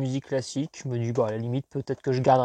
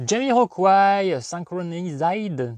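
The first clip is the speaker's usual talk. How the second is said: exaggerated put-on English accent, high and loud; 5 semitones higher, 5 dB louder than usual. Speaker reading a CD title aloud, in a put-on English accent. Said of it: "Vous entendez mon magnifique accent anglais".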